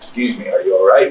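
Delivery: plain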